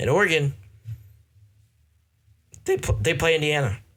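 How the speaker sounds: cracking, breaking voice. Giving a football prediction, voice cracking. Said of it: "Excuse my voice crack".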